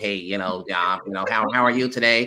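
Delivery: talking through the nose. Demonstrating a way of talking linked to whiteness: nasal put-on voice. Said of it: "it's now talking more nasal".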